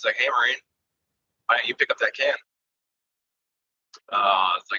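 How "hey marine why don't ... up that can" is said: half-shouted, mildly yelled. Retelling the Gunny telling a Marine to pick up a can: imitating someone yelling. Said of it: "he yelled at me".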